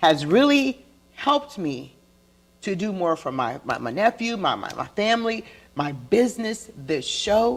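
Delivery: choked-up voice catching, close to crying. Talking with a co-host on the show, the speaker is about to cry. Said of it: "like I'm about to cry".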